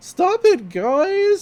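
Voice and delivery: very high, loud yelp with cracking voice.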